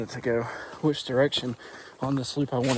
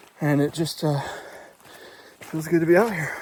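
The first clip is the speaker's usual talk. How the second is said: winded, out of breath, higher; 3 semitones higher than usual. Out on a trail, talking while out of breath. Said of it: "I know I'm pretty out of breath already".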